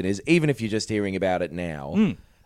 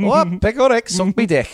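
fake Liverpool accent, higher and louder; 12 semitones higher, 7 dB louder than usual. Joking about what people say in Manchester, in a fake Liverpool accent. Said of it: "that is not a Mancunian accent that I'm doing".

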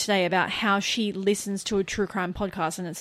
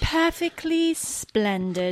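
put-on British accent, pitched up; 8 semitones higher than usual. Reading back a coffee order after being challenged: put-on British accent. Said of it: "Your accent".

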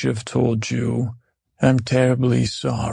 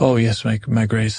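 plain

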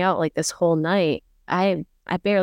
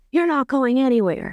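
put-on sudden furious snap of temper, pitched up; 7 semitones higher than usual. Retelling how he flipped when asked to go home: mock-angry outburst. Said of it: "he flips and he's like".

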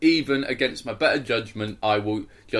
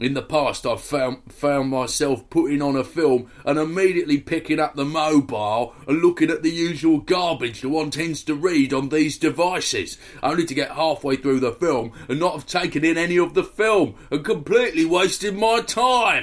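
Essex accent with slightly raised pitch; 5 semitones higher, 3 dB louder than usual. Reading out a listener's letter, as the writer asked: Essex accent like Ray Winstone. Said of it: "please read my letter out in an Essex accent".

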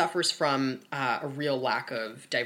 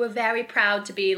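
terrible put-on Australian accent, loud and high; 8 semitones higher, 6 dB louder than usual. Speaker quoting Australian Housewives cast members, in a terrible Australian accent. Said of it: "that's a terrible Australian accent".

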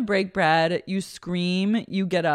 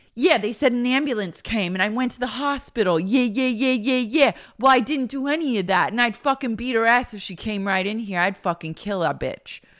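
tough street-talk voice with hard attitude; 4 semitones higher than usual. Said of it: "street Karen comes out".

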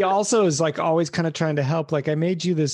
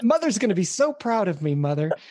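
mock excitement, higher pitch; 4 semitones higher than usual. Voicing a robot character whose plan is working: imitating an excited character.

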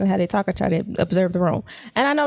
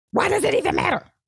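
mock hollering outburst, pitched way up; 10 semitones higher than usual. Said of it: "Who she hollering at?".

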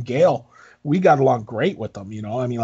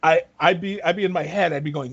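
normal talking voice

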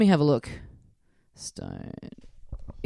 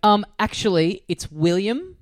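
plain

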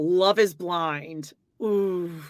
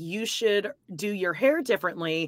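ordinary talk

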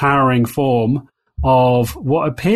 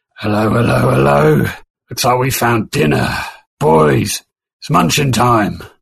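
rough, rasping, creaky monster voice. Narrating a game scene, the speaker voices someone calling from the cliff edge in a booming voice. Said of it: "as a booming voice".

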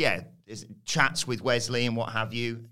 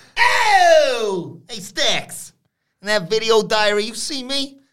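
terrible shrill yell, high and slow, oh drawn out; 12 semitones higher, 10 dB louder than usual. Retelling a backstage segment in a terrible Tony D'Angelo impression. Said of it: "Terrible impression".

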